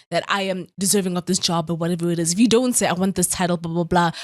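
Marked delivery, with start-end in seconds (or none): none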